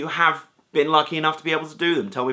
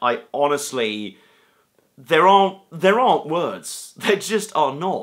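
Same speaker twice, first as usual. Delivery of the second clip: very slow voice, choked with emotion. The speaker talks about an overwhelming experience, getting choked up. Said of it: "I'm even getting choked up right now".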